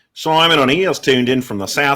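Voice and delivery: terrible, fake put-on New Zealand accent. Announcing someone who tuned in from the south: terrible New Zealand accent. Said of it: "That's my terrible New Zealand accent".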